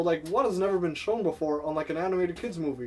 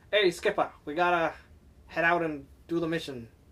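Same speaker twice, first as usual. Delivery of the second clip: put-on old-timey 1950s street-corner newsboy voice. Asking which penguin is which, guessing his voice: Kowalski as 1950s newsie. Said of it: "talks like a 1950 newsie".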